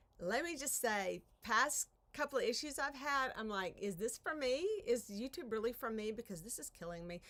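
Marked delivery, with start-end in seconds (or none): none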